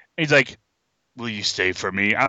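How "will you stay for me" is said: very deep reverberating voice, much lower, quieter. Quoting what a hot dude said to her, in a very deep low voice. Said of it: "the voice was so low it could reverberate".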